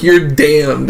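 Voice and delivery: plain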